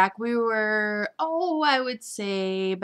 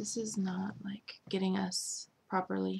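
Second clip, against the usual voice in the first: soft, creepy whisper. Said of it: "Oh, that was creepy".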